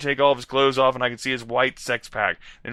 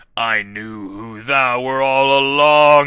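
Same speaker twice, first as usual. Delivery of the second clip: evil, sarcastic cackle, much slower; 6 dB louder than usual. Reading a story aloud, the villain taunts the narrator: evil sarcastic cackle. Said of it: "he cackled evilly and sarcastically at me".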